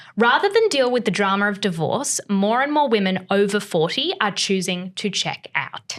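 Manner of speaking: ordinary delivery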